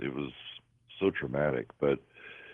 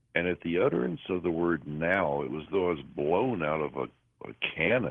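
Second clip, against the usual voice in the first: ordinary talk, nothing marked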